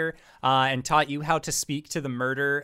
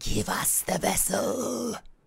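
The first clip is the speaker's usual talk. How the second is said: rough, hissing creature voice; 4 semitones higher than usual. A game master voices a creature of pure fire looming forward, hissing creature voice. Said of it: "hisses out".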